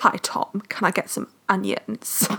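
slow, deep, deliberate put-on low voice. Recalling a film, the speaker quotes an actress's line: imitating Jazz's low voice. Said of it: "she was doing that low voice and she was like".

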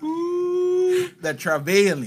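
very high, swooping, sing-song preacher voice. Imitating a pastor's recurring phrase: Pastor Laura preacher voice. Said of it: "You heard that preacher's voice?".

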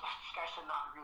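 muttered quietly under the breath, as an aside. Quoting what a woman said about him, muttered under her breath. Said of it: "under her breath".

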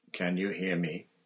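softly spoken. Kneeling level with a dazed man, the speaker asks quietly. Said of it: "Dumbledore asked quietly".

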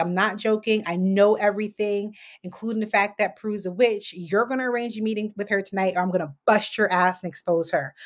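ordinary delivery

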